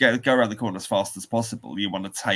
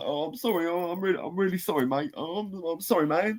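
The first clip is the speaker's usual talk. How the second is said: high, fawning, over-apologetic, grovelling pleading voice; 9 semitones higher, 4 dB quieter than usual. Retelling apologizing to a man after damaging his bike, mock-grovelling apology. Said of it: "I was all grovelly and apologies".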